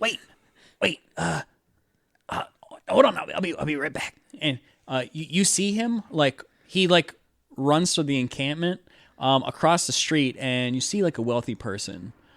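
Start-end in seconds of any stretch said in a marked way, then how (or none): 0.0-4.1 scratchy, rough, creaky voice with stammering. Voicing a tweaker calling after the walking player: voicing a tweaker. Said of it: "He goes".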